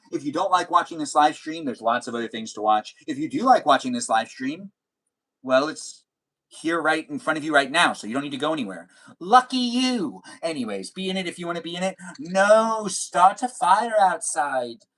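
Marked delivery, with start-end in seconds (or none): 12.1-14.7 long, stretched, very slow, high drawl. Reading a viewer's chat message aloud, imitating her long drawl. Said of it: "I'm talking in, uh, user blah, blah, blah's voice".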